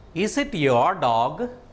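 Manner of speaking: tune climbing upward on "dog". Explaining question intonation, with rising pitch toward the end on dog. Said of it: "Towards the end of the sentence, my speech reached a higher level".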